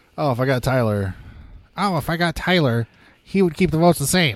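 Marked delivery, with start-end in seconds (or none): 1.8-4.4 eager, excited, high-pitched put-on character voice. Retelling what Scotty says in his little thing: Scotty impression. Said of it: "that's my Scotty impression".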